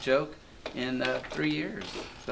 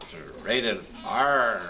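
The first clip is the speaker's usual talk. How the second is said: put-on pirate character voice; 6 semitones lower than usual. Explaining that pirates are rated r, in a put-on pirate voice. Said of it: "you gotta do it with the voice".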